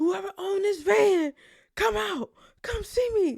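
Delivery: shrill screaming, very loud and high-pitched. Retelling how a man screamed for the van's owner: retelling a scream. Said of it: "He was screaming".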